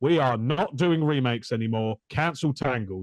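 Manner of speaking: ordinary delivery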